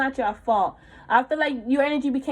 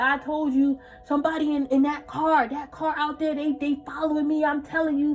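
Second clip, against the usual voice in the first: put-on tearful, crying, paranoid rant; 3 semitones higher than usual. Retelling a partner's rant after a tarot reading: imitating him crying and paranoid. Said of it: "He's crying".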